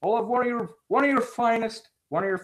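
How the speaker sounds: fake cartoonish voice. Showing a voice lately enjoyed doing: Wimpy voice. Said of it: "the hamburger eater from Popeye".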